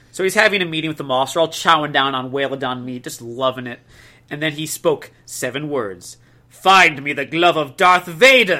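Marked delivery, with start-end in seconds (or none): 6.5-8.6 resounding, booming, loud delivery. Narrator reads a leader's seven-word command at a meeting with his officers, booming voice. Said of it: "He said in a booming voice".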